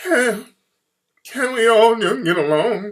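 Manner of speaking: high, slow whimpering, pleading voice. Retelling a public appeal to calm the riots: imitating Rodney King's whimpering voice. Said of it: "he came out there with that whimpering voice".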